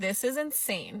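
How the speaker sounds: ordinary talk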